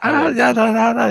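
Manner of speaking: put-on very high, burbling, babbling baby talk. Retelling how a little one standing in a crib answered: imitating baby talk. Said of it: "baby talk".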